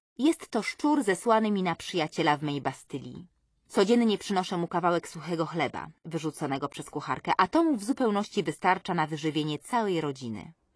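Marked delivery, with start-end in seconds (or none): none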